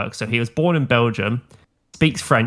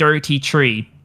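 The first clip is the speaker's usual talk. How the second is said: put-on Irish thirty-three, th as d and t; 3 semitones higher than usual. Retelling how a teacher said thirty-three: imitating a teacher's Irish accent. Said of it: "put on an Irish accent for, like, occasional words".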